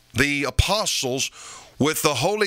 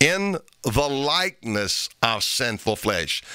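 slow, stressed delivery of "in the likeness of sinful flesh". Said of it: "I want to emphasize the word there".

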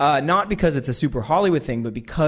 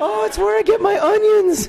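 over-the-top, very high, loud gushing squeal. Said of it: "Jerry O'Connell's like this".

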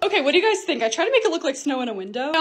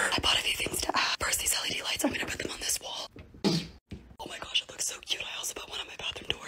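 very quiet whispered narrating voice; 11 dB quieter than usual. Narrating a room-decorating video, whispering. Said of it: "I'm just gonna whisper".

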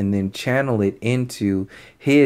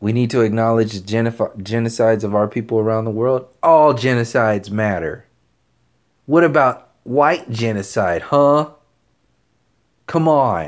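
ordinary talk, nothing marked

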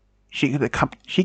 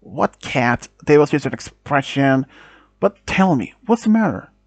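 ordinary delivery

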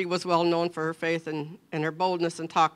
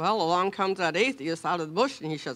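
ordinary delivery

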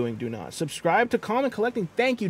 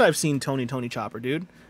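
normal talking voice

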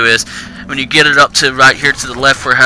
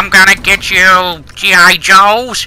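cartoon villain voice, much higher; 6 semitones higher than usual. Describing a toy game's villain who threatens the G.I. Joes; Skeletor-like villain voice. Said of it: "it's more like a Skeletor".

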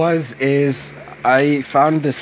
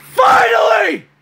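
joyful scream, much higher and louder; 5 dB louder than usual. Speaker celebrating that something has finally happened, screaming with joy. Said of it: "I am screaming my lungs out".

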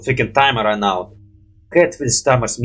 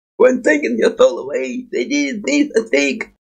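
bad character voice, squeezed, very high, creaky; 12 semitones higher than usual. A player admitting they're bad at this voice tries again, bad Fiddlesticks voice. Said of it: "I'm doing so bad at voice fiddlestick".

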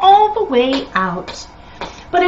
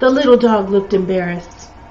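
plain reading voice

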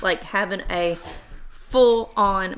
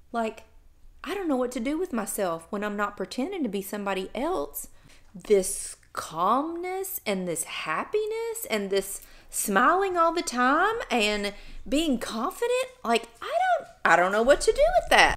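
totally sarcastic, mock-complaining tone. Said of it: "I'm being totally sarcastic".

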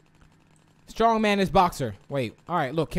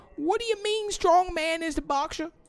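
very high, squeaky, baffled, mock-incredulous tone. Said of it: "I'm like".

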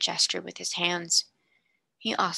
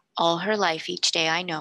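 ordinary delivery, nothing marked

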